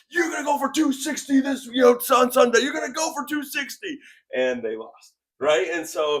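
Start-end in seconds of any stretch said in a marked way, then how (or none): 0.1-4.0 very high, loud, jeering shouted yell. Retelling how a man yelled at Kevin Smith in a hotel elevator, retelling a yell. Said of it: "he's yelling at Kevin".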